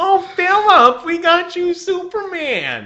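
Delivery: very high, loud, swooping, sing-song, doting mom voice. Act out your mom speaking to her child Philip, in a Fran Drescher voice. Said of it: "make my mom sound like Fran Drescher?".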